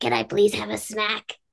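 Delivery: weird, creaky, croaky talking-doll voice. Telling a friend about a TikTok doll and how she talks: Jasper the doll's voice. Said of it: "she talks like this".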